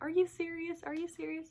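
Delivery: mock laughing through the words, high, disbelieving. Retelling an ultrasound visit, speaker quotes her husband; retelling laughing disbelief. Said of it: "He was just laughing his head off".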